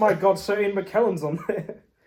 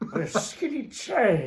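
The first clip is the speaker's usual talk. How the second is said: fake elderly wizard voice. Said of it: "Your Gandalf voice".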